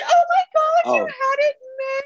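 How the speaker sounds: very high-pitched, thrilled, gushing housewife voice. Recapping a TV scene, a speaker acts out a character reacting to an object, imitating an excited housewife. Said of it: "he's like an excited housewife".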